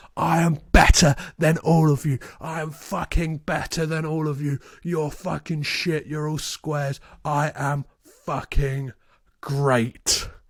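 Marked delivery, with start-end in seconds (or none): none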